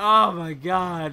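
groaning in embarrassment. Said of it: "I'm like".

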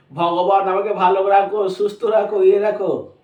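plain

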